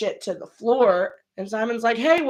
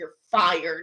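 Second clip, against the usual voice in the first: lower mock whispered voice; 4 semitones lower than usual. Retelling how the bartender fired someone: imitating a whisper. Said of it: "whisper in her ear".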